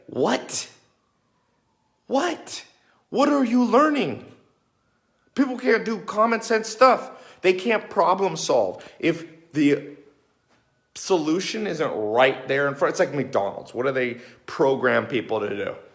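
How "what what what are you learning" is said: mock surprised tone, pitched higher. Retelling own reaction to people hired out of school: imitating surprised questioning. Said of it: "like, a surprise".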